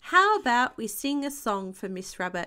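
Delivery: ordinary delivery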